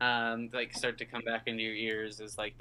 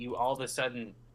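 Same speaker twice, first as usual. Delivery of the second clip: ordinary talk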